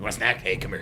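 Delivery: playful movie-ghoul character voice. Describing a scene where only the character's hands appear, Beetlejuice impression. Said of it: "and he's like".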